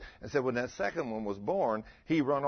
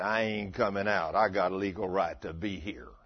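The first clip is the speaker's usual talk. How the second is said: put-on man's voice, much lower; 6 semitones lower than usual. Retelling commanding a devil out of a woman, voicing her reply in a man's voice. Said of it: "it was a man's voice".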